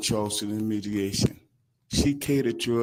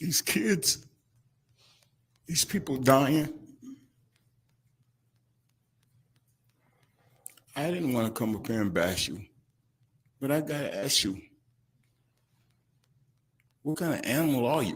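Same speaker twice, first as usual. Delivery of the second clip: crying while speaking, tearful voice; 3 semitones higher than usual. Addressing the judge and the man who stole, crying while speaking. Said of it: "I'm crying for what he did".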